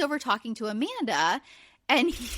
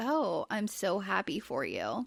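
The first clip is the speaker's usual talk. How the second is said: soft, slow, nearly monotone, lifeless delivery; 3 semitones lower, 6 dB quieter than usual. Recounting how a woman congratulated someone without smiling, retelling an almost monotone line. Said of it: "says it almost monotone".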